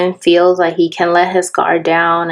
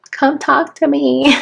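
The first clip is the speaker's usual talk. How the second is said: high, begging, pleading voice; 8 semitones higher than usual. Describing a card, voicing the woman begging the man, mock begging. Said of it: "She's like begging him".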